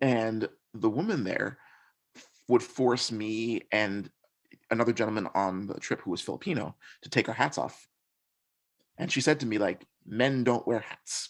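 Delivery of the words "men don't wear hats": imitated thick, heavy Swedish accent. Quoting the hostel woman who made them take their hat off, thick swedish accent. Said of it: "in her accent".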